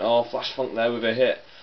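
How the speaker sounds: ordinary talk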